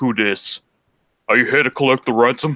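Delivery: big loud booming voice. Acting out answering a prank caller's phone call: big booming voice. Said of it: "pick up with a big booming voice".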